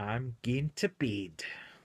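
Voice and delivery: deliberately bad, clumsy, put-on Scottish accent. Signing off to listeners at the end, in a purposely bad Scottish accent. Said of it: "purposely a bad Scottish accent".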